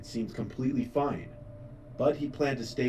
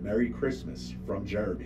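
ordinary delivery

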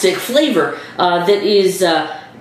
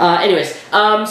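ordinary talk

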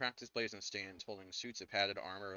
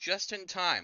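very high-pitched, very loud yelling shout; 10 semitones higher, 8 dB louder than usual. Narrator voices her calling out as bandits burst through the door, yelling. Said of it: "She yells".

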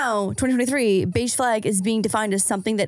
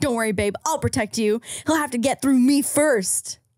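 put-on douchey bro guy voice; 2 semitones higher than usual. Reading out a story about a boyfriend's habit, in a douchebag guy voice. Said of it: "In a douchebag guy voice and say things like".

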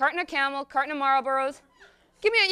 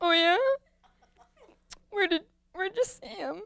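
put-on weeping and crying, pitched much higher; 5 semitones higher than usual. Acting out a phone call with Maria after two weeks of crying, retelling crying on the phone. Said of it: "Two weeks go by, I walk up and down the hall, crying, smoking cigarette after cigarette, cradling a bottle of bourbon like it's a teddy bear. Sometimes a phone would ring".

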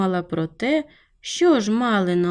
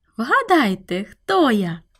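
delighted, joyful tone. A girl runs out to her friends still playing outside, a joyful question. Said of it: "радісно запитала вона".

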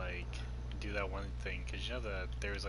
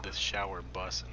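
ordinary delivery

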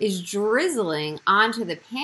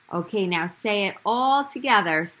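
ordinary talk

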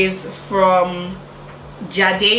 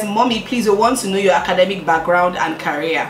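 plain

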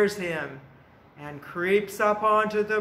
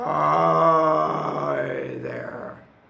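gruff, rough, creaky, ugly troll voice; 4 semitones lower than usual. A storyteller voices the ugly old troll who lives under the bridge; troll voice. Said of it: "And he talks like this".

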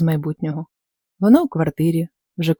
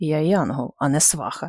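displeased grumbling, much quieter; 5 dB quieter than usual. An angel, asked to find someone a partner, answers with a displeased grumble. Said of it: "невдоволено пробурчав Нікі".

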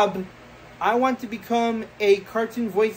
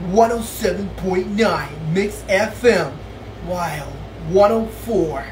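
low radio DJ announcer voice; 4 semitones lower than usual. Doing impressions of radio stations heard in Texas, as an iHeartRadio DJ impression. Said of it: "I'm going to do iHeartRadio impressions".

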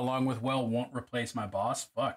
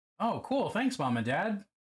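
put-on small, pitched-up childlike kid's voice; 7 semitones higher than usual. Retelling asking the parents about peepers: imitating own childhood self. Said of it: "That's my imitation of how that went".

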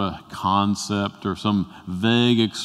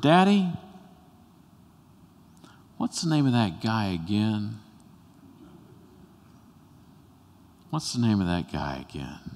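put-on tiny child's small, hushed half-whisper; 5 dB quieter than usual. Retelling a little boy waking at thunder and asking his daddy, small half-whisper. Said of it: "in a little small voice, he whispered".

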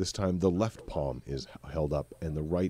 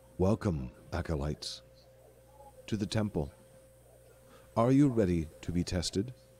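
steady, calm, confident, assured, seasoned voice. Game master voicing a temple statue welcoming the players, confident, calm, experienced voice. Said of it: "more confident, more calm, more experienced".

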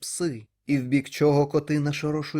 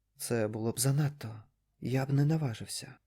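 muttering under breath, quieter; 2 semitones lower, 6 dB quieter than usual. Reading a story, the narrator's guide through a dark house, muttering to himself. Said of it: "Все бурмотів він".

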